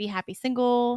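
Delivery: normal talking voice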